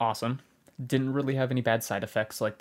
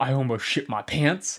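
put-on half crying, half laughing, louder; 3 semitones higher, 5 dB louder than usual. Retelling a phone call from Gabe at work, imitating Gabe laugh-crying. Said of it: "he calls me almost crying, laughing".

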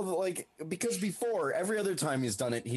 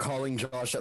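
ordinary delivery

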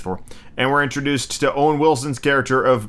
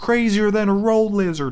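soft, a little nasal impression; 8 semitones higher than usual. Explaining how to do Owen Wilson impressions, saying a movie line in an Owen Wilson voice. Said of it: "you just have to kind of make it a little soft and a little nasal".

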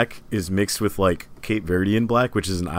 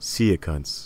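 sensual, seductive, lower voice; 3 semitones lower, 3 dB quieter than usual. Saying goodbye after being urged to say it: sensual.

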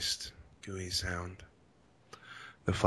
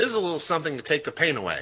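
sweet, cheery, high, fast, chirpy character voice. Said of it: "Pinky informed Dash".

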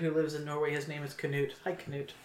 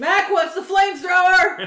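shrill, very loud, high-pitched, all-out yell; 13 dB louder than usual. Showing how a favourite movie quote has to be yelled, yelling the quote. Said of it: "Would you like me to yell".

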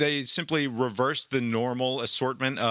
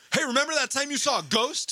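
very high, acted-out, accusing yell; 14 semitones higher than usual. Retelling the next scene, where a character yells at her: imitating someone yelling. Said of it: "is yelling at her about how".

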